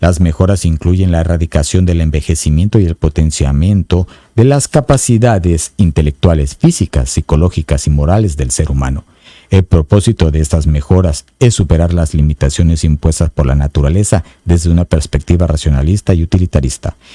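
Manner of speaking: very low, deep broadcaster announcer voice. Speaker reading a paragraph from a book to listeners, in an announcer voice. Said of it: "Así con voz de locutor".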